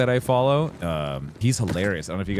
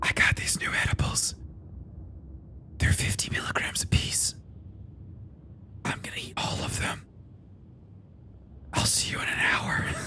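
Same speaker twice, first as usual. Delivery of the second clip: whispered throughout, hushed and breathy, under the breath. Imitating a guy who does everything in a whisper: whispering. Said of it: "he does everything while he whispers".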